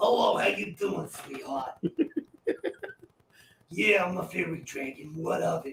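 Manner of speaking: put-on swooping New Jersey accent with attitude. Narrator voicing a little fairy dragon talking to the players, Jersey accent. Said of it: "He speaks with a Jersey accent".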